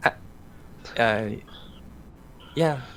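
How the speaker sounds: let-down, disappointed, hesitant reluctant yeah. Voicing Mirio replying when asked if everybody has eaten: disappointed. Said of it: "disappointment in his voice".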